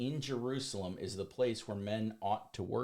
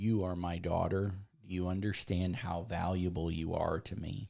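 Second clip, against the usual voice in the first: acted affectionate, tender tone; 4 semitones lower than usual. Retelling the creator of the universe speaking to a woman, in a loving, tender voice. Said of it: "With such a loving".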